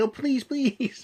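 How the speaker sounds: very high, pleading, begging woman's voice. Acting out a woman begging a man, hand-puppet style: mock pleading woman. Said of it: "this is John's hand puppets here".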